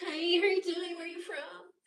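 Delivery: mock friendliness. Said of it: "I'm gonna be all nice and shit".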